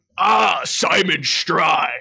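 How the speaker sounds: very loud gravelly voice, belted out. Showing a line from the musical role: low gravel Hyde voice. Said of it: "that kind of thing".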